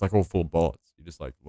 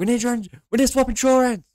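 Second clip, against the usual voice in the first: very high-pitched, loud yelling; 7 dB louder than usual. Retelling a player in-game after a crash: imitating someone yelling. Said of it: "just starts yelling about fucking swapping insurance".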